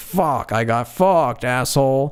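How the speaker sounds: mock panicked outburst, slow and drawn out. Retelling a man's outburst after being stiffed on tickets: imitating someone freaking out. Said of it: "this is him freaking out".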